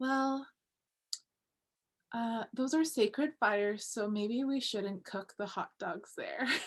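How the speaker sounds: gentlest possible, mild, soft voice. Retelling a youth's reply after an awkward silence, retelling in a gentle soft voice. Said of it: "like in the most gentle and soft voice ever".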